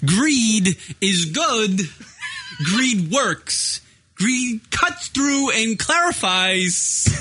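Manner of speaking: drawn-out strange voice. Quoting a movie line for the others in a weird guy voice: Christopher Walken impression. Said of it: "Trying to do Walken".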